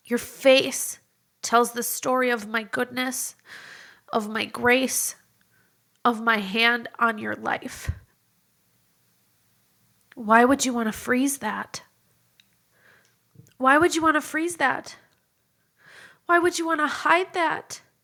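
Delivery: choking up, close to tears. Speaking to the audience, near tears. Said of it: "I can't even get this through this without crying".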